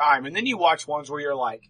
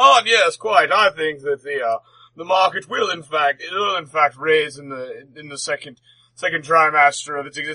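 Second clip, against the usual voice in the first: put-on stuffy old man voice, louder, slower; 5 dB louder than usual. Speaker describing men smoking cigars and drinking brandy imitates them, stuffy old man voice. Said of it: "stuffy old men".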